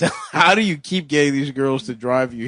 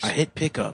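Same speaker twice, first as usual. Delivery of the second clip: hushed, breathy whisper under the breath; 7 dB quieter than usual. In a car pulling into Checkers, speaking to the driver: whispering. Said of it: "Why are you whispering?".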